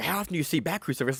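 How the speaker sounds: play-acted dumb, dopey, awed, amazed-sounding delivery. Mimicking how a friend asked the question earlier, mock-amazed, dumb way. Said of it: "you said it like it was amazing".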